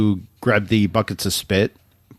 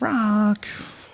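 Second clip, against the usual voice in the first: put-on whining voice, higher pitch; 11 semitones higher than usual. Retelling a film scene to the other speakers, imitating Mickey whining. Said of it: "Mickey's kinda whining a little bit there".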